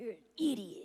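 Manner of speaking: raspy cartoon-character voice, pushed out. Answering a fan about the hardest voice to do: raspy Terrence voice.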